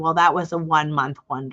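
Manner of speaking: imitated muttering, quietly under the breath. Retelling what the top mortgage woman said: imitating someone muttering under breath. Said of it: "under her breath".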